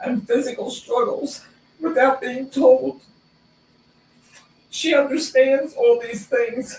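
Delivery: choked-up, tearful voice, pitched high, catching. Speaking about a woman she has seen pray with people, crying, voice choked up. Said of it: "I'm sorry, I'm crying".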